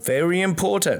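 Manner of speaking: put-on Australian accent. Discussing listings data, the speaker slips into an Australian accent. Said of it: "Australian accent once again".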